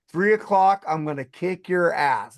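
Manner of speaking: ordinary talk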